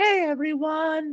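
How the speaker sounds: very high, warm, kind, friendly voice. A guest telling the host how her videos begin, imitating Ivy's nice, kind, warm intro. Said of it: "such a nice, kind, warm intro".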